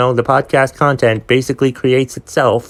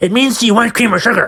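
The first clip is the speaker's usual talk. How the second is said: very high-pitched, snappish, curt delivery; 10 semitones higher than usual. Retelling a coffee order, quoting her answer: imitating someone snapping. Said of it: "she, like, snapped at me".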